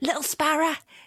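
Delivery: high-pitched mock Cockney calling voice. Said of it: "she's got a fucking Cockney accent".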